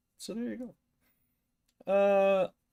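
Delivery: words stretched out by a yawn. Chatting with a listener about the weather, yawning. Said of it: "I'm yawning".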